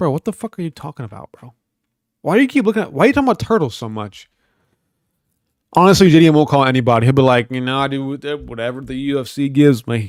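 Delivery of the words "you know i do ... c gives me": put-on very slow, drawn-out country accent. Speaker imagines how a UFC fighter will answer, JDM with a country accent. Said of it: "I gave him a country accent".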